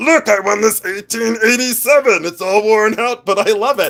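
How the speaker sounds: puppet-like character voice. Pretending to show off a coin pusher win: talking like a Muppet. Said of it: "Why did I talk like a Muppet".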